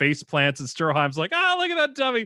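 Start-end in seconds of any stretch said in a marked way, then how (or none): 1.3-2.3 put-on giggling laugh, higher. Retelling a JoJo scene where Stroheim mocks a fall: imitating Stroheim giggling. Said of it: "losing his mind, giggling and laughing".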